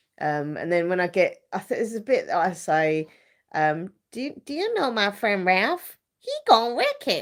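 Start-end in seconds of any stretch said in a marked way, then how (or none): 4.1-7.2 high, bouncy put-on American accent. Re-doing a line from their own performance as Vanellope, American accent. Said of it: "trying to do like an American accent and be this Vanellope character".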